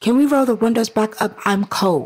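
mock tone with attitude. Retelling a friend's complaint about the car windows, imitating him with attitude. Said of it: "With a whole attitude though in the way he said it".

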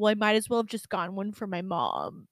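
angry, fast, rattled-off delivery. Retelling what a man said after being refused a back massage, imitating an angry man. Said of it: "He was so mad".

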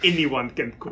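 light, little put-on French accent. Speaker retelling a scene where a character answers a question, little fake french accent. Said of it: "he puts on this little fake French accent".

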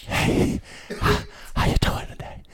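put-on breathy, hushed seductive voice. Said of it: "And be like".

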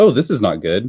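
very calm, understated, totally unbothered delivery. Imitating the lead surrounded by Raptors: calm Matthew Broderick impression. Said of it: "very calmly like".

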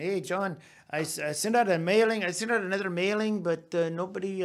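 put-on English with a lilting Puerto Rican accent. Retelling what a student said yesterday: imitating Jose's accent. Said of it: "with his accent".

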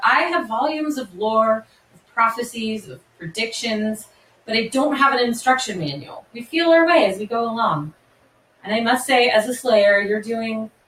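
ordinary talk

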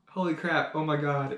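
ordinary talk, nothing marked

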